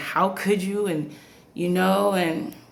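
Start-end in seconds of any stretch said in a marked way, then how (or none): none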